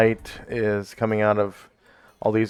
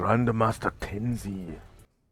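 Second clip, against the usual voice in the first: hushed, half-whispered aside; 7 dB quieter than usual. Voicing a guard who names a passing character: half-whispering guard. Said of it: "you hear one of 'em whisper to the other".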